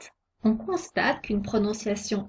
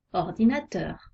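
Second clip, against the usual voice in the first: ordinateur, final teur leaned on gently; 3 semitones lower than usual. French lesson on tonic accent on the last syllable, light stress on teur. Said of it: "On accentue un peu teur".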